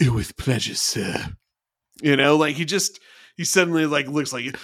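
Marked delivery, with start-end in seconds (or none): 0.0-1.1 put-on sinister delivery. Speaker acting out Reed's reply to Trip's order: sinister Reed impression. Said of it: "gets very sinister".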